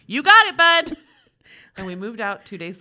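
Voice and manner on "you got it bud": booming, very loud, full volume, pitched up. Reading a ghost story where he answers a voice: retelling a loud reply. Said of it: "I said loudly".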